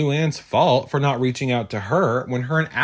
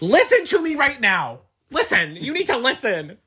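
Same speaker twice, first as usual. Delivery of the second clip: mock demanding, insistent yell, very high-pitched; 11 semitones higher than usual. Retelling a heated argument, imitating someone yelling. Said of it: "Bethany is yelling at her to".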